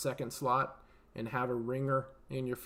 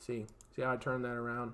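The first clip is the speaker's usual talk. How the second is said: usual speaking voice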